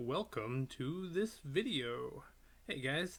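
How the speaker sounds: very slow, drawn-out, each word stretched. Opening a chess video with a Chess Explained impression. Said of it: "that's my impression of Chess Explained".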